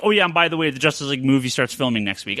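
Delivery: plain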